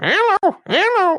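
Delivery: talking parakeet voice, pitched very high. Recalling a bird that could talk and doing its impression: talking parakeet impression. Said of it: "I started doing that impression".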